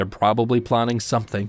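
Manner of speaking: usual speaking voice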